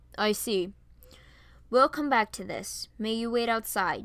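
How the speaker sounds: ordinary delivery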